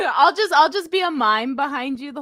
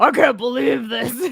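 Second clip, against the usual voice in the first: gruff, miserable, rough put-on clown voice; 3 dB louder than usual. Friends joking that all clowns sound the same, doing a rough, gruff clown voice. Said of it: "Rough and gruff".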